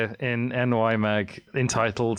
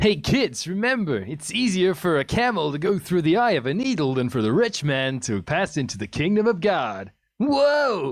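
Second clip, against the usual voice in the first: high cartoon hero voice, pitched up, swooping wide; 5 semitones higher than usual. Joking that Jesus speaks in a Sonic the Hedgehog voice. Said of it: "he's doing the Sonic voice".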